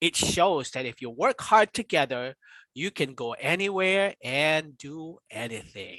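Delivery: plain reading voice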